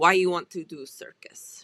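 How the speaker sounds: put-on heavy Russian accent. Quoting the woman's question during a verbal quiz, thick Russian accent. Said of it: "She has this thick Russian accent".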